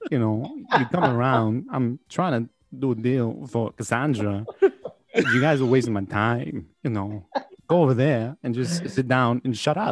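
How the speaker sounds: thoroughly annoyed, irritated, can't-be-bothered, dismissive. Quoting the movie villain after being asked for the voice: Christopher Walken voice. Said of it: "that is a great Walken".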